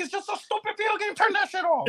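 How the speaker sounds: put-on shrill, very high, angry, fed-up scolding voice. Retelling how his mom reacted to him crying over a video game, imitating her angry scolding. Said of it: "She used to get mad".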